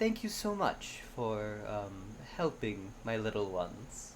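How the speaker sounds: very gentle, very airy, soft dragon voice. Voicing a dragon that turns to the listener, gentle, airy dragon voice. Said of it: "in a very gentle, very airy voice".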